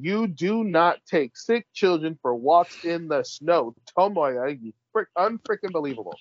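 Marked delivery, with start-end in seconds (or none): 0.0-3.7 slow, emphatic delivery as if in all caps. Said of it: "literally says in all caps".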